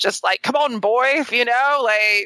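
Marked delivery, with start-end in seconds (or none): 0.4-1.2 stoic, strong-jawed manly voice. Describing a movie character, imitating him: stoic strong-jawed Mac voice. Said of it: "he's the stoic, strong-jawed".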